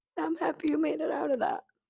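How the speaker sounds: choked up, near tears. Telling a friend who survived addiction, close to tears: choked up. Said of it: "I'm about to start crying".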